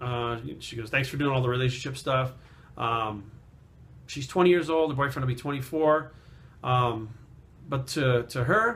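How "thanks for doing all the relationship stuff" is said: usual speaking voice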